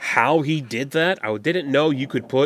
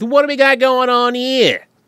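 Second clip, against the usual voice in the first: put-on slight Boston accent, high and loud. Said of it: "a bit of a Boston thing".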